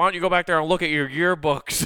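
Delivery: mock, loud, high, taunting, jeering heckling yell. Speaker recounts a season-ticket fan heckling referees: retelling a fan's yelling. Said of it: "he's just yelling at the referees".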